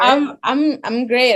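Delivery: thrilled, excited, bubbling-over, slow gush. Answering the other person's how-are-you at the start, excited. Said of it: "As you can see, I'm excited".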